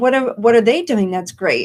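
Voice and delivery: ordinary talk, nothing marked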